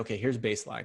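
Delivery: plain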